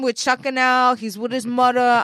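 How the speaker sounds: poor New York accent.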